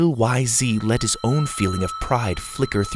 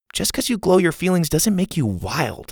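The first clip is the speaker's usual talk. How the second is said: incredulous, disbelieving, pitched-up tone; 7 semitones higher than usual. Reading a story's line doubting a classmate's claim: incredulous. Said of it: "said incredulously".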